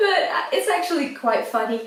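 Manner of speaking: laughing while talking. Speaker describing a product's packaging, laughing.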